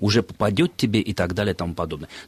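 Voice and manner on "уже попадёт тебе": ordinary talk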